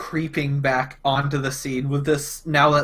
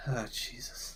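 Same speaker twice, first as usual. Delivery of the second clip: sighing, quieter; 3 semitones lower, 16 dB quieter than usual. Voicing a character watching from a distance: sighing in character. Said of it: "just sort of sighs".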